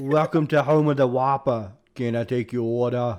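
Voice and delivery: put-on, fake Australian accent. Recreating a fast-food drive-through greeting, fake Australian accent. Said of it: "I convinced so many people that I was Australian".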